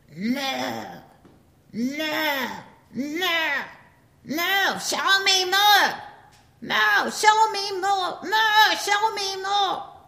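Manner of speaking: very high, loud, long-held, drawn-out bellow. Acting out what someone in the woods began yelling, retelling a bellow. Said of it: "began bellowing".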